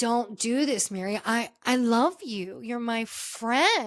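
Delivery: slow, earnest, heartfelt pleading with halting start. Retelling a scene where Angie begs Mary not to end things, imitating Angie pleading. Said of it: "Angie was pleading".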